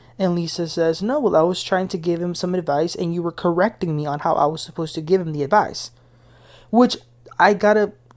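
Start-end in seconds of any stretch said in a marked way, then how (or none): none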